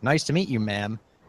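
ordinary talk, nothing marked

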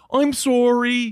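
put-on Filipino Canadian accent. Joking about self-flagellants apologizing, doing a filipino canadian impression. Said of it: "this is my impression of a Filipino Canadian".

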